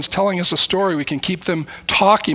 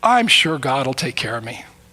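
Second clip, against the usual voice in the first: put-on cheerful voice, lower; 5 semitones lower than usual. Retelling a friend's answer after he lost his job: imitating a cheerful reply. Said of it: "He said with cheerful voice".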